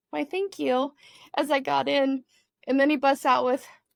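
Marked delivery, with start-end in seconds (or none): 0.2-1.0 tiny, squeaky little voice. Retelling a nervous thank-you while getting into a car: retelling a squeaky reply. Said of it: "I squeaked out this little".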